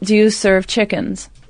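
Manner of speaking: plain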